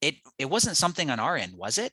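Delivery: worried, confused, concerned tone. Sales call example about a weight-loss offer, concerned, confused tone. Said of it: "holding like the concerned, confused frame".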